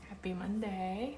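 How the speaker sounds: very soft, weary, tired, hushed half-whisper. Greeting a co-host as the recording starts, half-whispering. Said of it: "Why are you whispering?".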